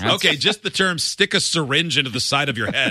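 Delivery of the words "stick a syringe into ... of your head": plain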